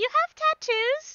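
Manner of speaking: high, put-on British child voice. Playing a kid in a scene who asks a question: generic British kid voice. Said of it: "not my Brit my generic British kid voice".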